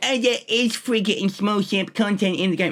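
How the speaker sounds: high, derisive, mocking put-on voice. Retelling what people who show up always say, mocking voice imitating people. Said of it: "I'm doing the fucking voice".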